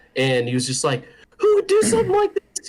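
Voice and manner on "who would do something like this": play-acted, very high, frantic, freaked-out outburst. Retelling how a man reacted to their prank: imitating someone freaking out. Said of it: "like freaking out".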